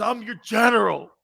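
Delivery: weepy, tearful, crying delivery. Retelling a coach's locker room speech before a championship game: imitating Marty Schottenheimer crying. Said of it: "He's crying like this".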